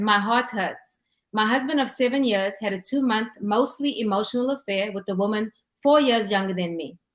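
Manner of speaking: ordinary delivery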